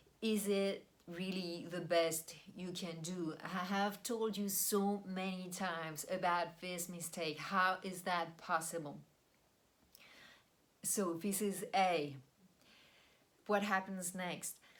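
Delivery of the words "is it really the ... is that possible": plain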